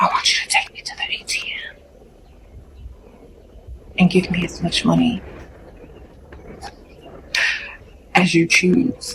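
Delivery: whispered close, intimate, barely voiced. Showing how to ask a man for money: whispering in his ear. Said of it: "Then whisper in his ear like this".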